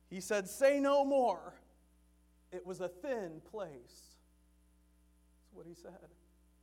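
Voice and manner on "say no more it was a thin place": put-on booming, very slow, loud Kentucky accent. Retelling what Brother Jenkins said on the phone, in Brother Jenkins's Kentucky accent. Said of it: "he said in that Kentucky accent of his".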